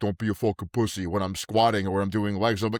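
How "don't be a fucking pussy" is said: put-on Italian accent. Retelling the voice heard while squatting: Italian voice. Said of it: "that Italian voice in my head".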